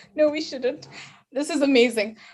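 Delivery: tearful, close to crying. Reacting to what the other speaker just said: tearful, close to crying. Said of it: "With tears in my eyes".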